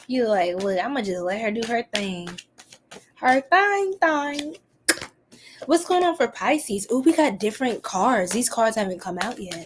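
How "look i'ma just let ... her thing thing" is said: put-on quiet, subdued, held-back voice. Teasing a quiet viewer by imitating Key being quiet. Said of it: "you was so quiet".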